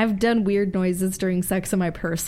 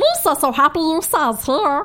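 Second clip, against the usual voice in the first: goofy, high, loud alien voice; 8 semitones higher, 5 dB louder than usual. Showing off voices when asked to, doing a Jar Jar Binks voice. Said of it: "Jar Jar Biggs. Go on".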